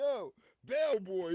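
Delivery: acted mock yell. Describing a man calling you a bellboy over his bags, imitating someone yelling.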